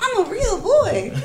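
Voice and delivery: very high-pitched, slow, stretched-out voice. Retelling a line from a talk about being a real man: high-pitched Pinocchio voice. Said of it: "With his high-pitched voice".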